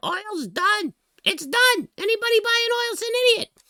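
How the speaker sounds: shrill, booming scream at full blast, pitched way up. Retelling a prediction about oil: imitating Jim Cramer screaming. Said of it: "when Jim Cramer was screaming".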